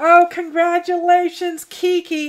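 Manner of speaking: choking up, crying. Congratulating Kiki on her very last day, choking up, crying. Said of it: "now I'm going to start crying again".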